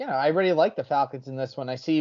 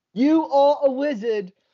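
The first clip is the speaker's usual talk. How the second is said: bad put-on English accent, very high-pitched; 10 semitones higher, 6 dB louder than usual. Saying the line again when asked to, in a bad english accent. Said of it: "I'm going heavy with the English accents today".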